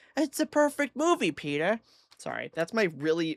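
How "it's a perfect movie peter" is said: awful, high, squeaky, swooping cartoon voice, barely tried. Praising a movie from the shelf: awful Lois Griffin impression. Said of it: "my really awful, like, not even trying Lois Griffin impression".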